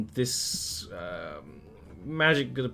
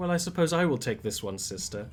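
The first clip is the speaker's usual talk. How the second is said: haughty, condescending, talking-down tone; 3 semitones higher than usual. Voicing a Lamia speaking Drow Elvish to its sister: condescending Lamia voice. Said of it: "condescendingly to Vidrida".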